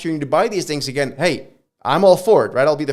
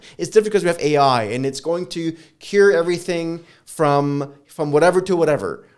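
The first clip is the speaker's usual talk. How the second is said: normal talking voice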